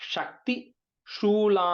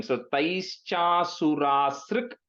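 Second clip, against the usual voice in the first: very slow, syllable by syllable delivery. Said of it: "I'll try to break it".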